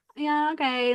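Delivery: casual, unbothered, nonchalant offhand delivery. Retelling how characters in the movie reacted, imitating a nonchalant reply. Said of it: "It was just so nonchalant".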